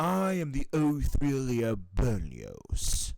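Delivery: booming character voice with big swooping swings. Recording a third take of a character line: deeper Berlioz voice. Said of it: "I'm going to do my voice for Berlioz".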